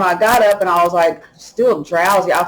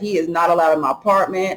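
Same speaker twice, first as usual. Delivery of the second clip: ordinary delivery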